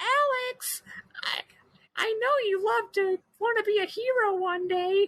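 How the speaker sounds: very high, slow, tiny cute voice, "Alex" stretched. Retelling what the dragon Null says to Alex: cute Null voice. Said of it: "he's got a very cute voice".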